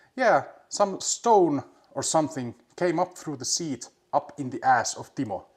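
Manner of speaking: loud, heavy put-on Finnish accent. Quoting a rally driver's interview answer: imitating a thick Finnish accent. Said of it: "such a thick Finnish accent how he".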